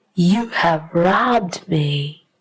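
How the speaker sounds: ordinary delivery, nothing marked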